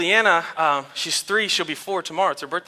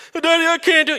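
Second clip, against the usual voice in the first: put-on tearful crying child voice, higher; 11 semitones higher than usual. Retelling a child's words while learning to ride a bike: imitating a crying child. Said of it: "And she's crying".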